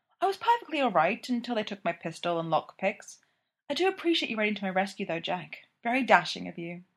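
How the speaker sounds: ordinary delivery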